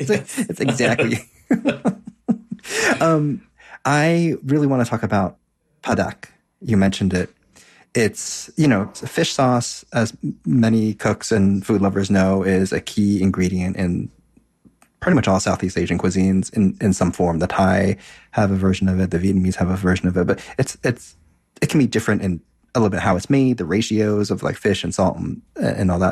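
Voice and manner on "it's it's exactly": higher, slow put-on Wisconsin accent, laughing through it. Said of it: "Scani accent came out".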